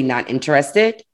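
ordinary talk

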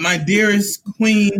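meek, yielding, deferential, submissive voice. Asked to let others hear an example: submissive voice. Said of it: "I'm using my submissive voice".

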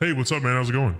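put-on grown-man voice. A guest greets the host at the start of the show; deep manly voice. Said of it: "you sound like you finally have that day where you became a man".

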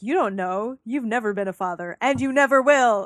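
put-on angry tone. Retelling how a character throws words back in his face: imitating June throwing it back. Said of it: "throws it back in his face".

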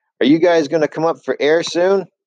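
high yell, as if from a distance. Someone yells from across the stage at a kissing couple; yelling across a stage. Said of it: "someone yelled from across the stage".

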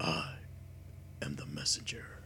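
very deep, gravelly, whispered voice. Describing a silent figure staring at John in the ring, speaking in a deep, deep gravelly voice. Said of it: "in a deep, deep, gravelly voice".

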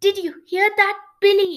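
very loud, rising, building excited voice. Shivrin asks Billy after hearing about the treasure, voice rising with excitement. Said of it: "her voice rising with excitement".

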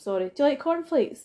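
imitated bone-dry deadpan, dead straight, no crack. Retelling a line from a film, imitating a deadpan delivery. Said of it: "blatantly just pan face saying something".

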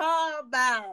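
Atlanta twang accent. Trying to say a phrase the way the other speaker says it, in an Atlanta twang. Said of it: "I'm trying to do my Atlanta twang".

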